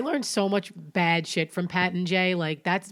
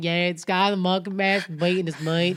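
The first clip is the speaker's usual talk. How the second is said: imitated Southern accent. Retelling what a brother told the police: imitating a southern accent. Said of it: "Southern, like, accent".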